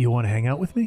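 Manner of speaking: low, throaty, conspiratorial voice from the back of throat. A character puts the fork down and leans closer to another: conspiratorial, throaty. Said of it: "conspiratorially puts the, the fork down and moves closer to Rosie and goes".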